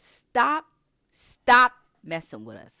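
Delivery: very loud outburst. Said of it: "I'm sorry, I didn't mean to get loud".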